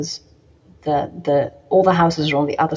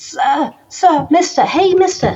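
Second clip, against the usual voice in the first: put-on very high, shrill, loud teenage voice calling out; 12 semitones higher, 5 dB louder than usual. Telling how a teenager calls out to you from a distance, shrill teenager's voice. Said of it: "this shrill voice like only teenagers have".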